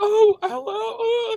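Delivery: very high, sobbing, put-on whimpering fake crying. Retelling answering a telemarketer's call as a prank: fake crying. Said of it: "I was like fake crying one time".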